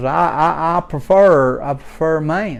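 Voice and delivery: ordinary talk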